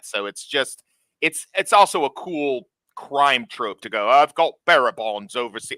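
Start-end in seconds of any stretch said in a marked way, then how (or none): 4.1-5.8 sudden, loud put-on British accent. Quoting a crime trope line in a British accent. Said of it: "Why am I doing a British accent?".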